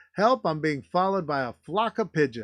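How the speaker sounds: usual speaking voice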